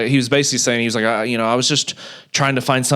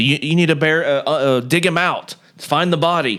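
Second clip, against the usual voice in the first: put-on angry man voice, higher pitch; 4 semitones higher than usual. Retelling a movie scene where Will gets angry: imitating Will, mad. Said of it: "he's all mad".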